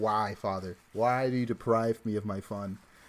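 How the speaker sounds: put-on crying cat voice. Voicing the upset cat after taking its plastic bag: imitating Midas crying. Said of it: "he's crying at me".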